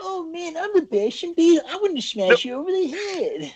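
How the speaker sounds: very high, goofy, dorky voice. Speaker mimics a talking action figure, in a dorky Bashing Beetle voice. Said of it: "can do his dork voice".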